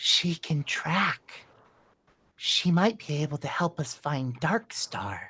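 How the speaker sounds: soft, hushed whisper under the breath. Voicing a character who speaks quietly to a companion: whispering. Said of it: "Castor looks over and whispers".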